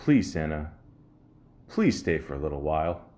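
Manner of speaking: very sexy, sultry, seductive put-on voice. Telling a joke, quoting the woman's plea: imitating a very sexy voice. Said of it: "in a very sexy voice".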